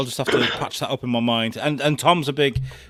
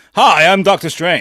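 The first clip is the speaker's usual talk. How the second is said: put-on American accent, higher and louder; 6 semitones higher, 10 dB louder than usual. Mocking an actor's American accent as Doctor Strange: Benedict Cumberbatch's American accent. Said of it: "his American accent is a bit".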